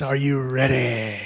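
bishop-style preaching voice, sermon-like delivery. Prompting listeners to ask their neighbor a question: T. D. Jakes bishop voice. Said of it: "In that T D Jakes Bishop voice".

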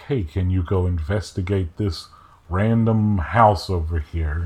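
normal talking voice

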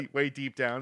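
ordinary talk, nothing marked

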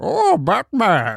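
put-on masked supervillain voice. Doing a run of impressions on request, the speaker does a Bane impression. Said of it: "now I'm gonna do Bane".

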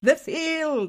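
high-pitched, film-style Irish accent. Showing how the title is said in the film, in an Irish accent. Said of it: "Do an Irish accent".

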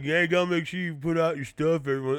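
smug, self-satisfied know-it-all tone. Complaining about a fellow podcaster, the speaker imitates Johnny Flores's smug tone. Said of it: "He said it with such a smug tone".

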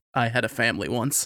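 slow, faraway, wistful tone. Retelling a running joke about a teacher: imitating a wistful tone. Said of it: "wistfully stares out the window".

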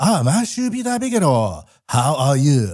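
put-on Japanese accent. Mimicking how people in Japan say his name: imitating Japanese speakers' accent. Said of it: "that's just the way everybody talks".

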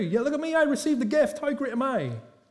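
put-on smug boasting. Imitating church members proud of receiving a gift: mock boasting. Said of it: "boasting about how good they were".

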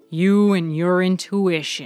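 loud, contemptuous, scoffing sneer. Reading a story, Heller answers Reynolds, who dislikes the place; sneering. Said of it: "Heller sneered".

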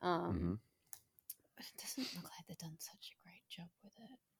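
barely audible, very quiet, hushed whisper. Speaker talking about a competitor of a company they worked with, whispering. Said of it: "I don't know why I'm whispering".

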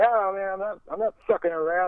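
high-pitched angry voice. Speaker retells a man's reply after laughing at his serious story: imitating angry Norm Macdonald voice. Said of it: "very agitated and angry".

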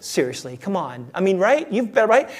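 coaxing, tempting inner voice. Acting out the flesh as a voice in the head: voicing the tempting flesh. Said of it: "He goes".

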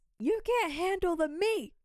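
very high-pitched, yelled shouting outburst. Retelling a character shouting at a hearing: imitating someone shouting. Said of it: "Jake s-, shouts".

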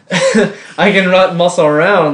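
high, loud words spoken while laughing.

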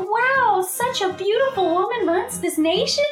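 put-on excitement. Retelling a story, acting out the main character seeing the emperor: acting out being all excited. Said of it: "She's all excited".

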